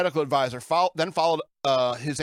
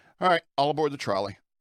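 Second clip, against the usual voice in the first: ordinary talk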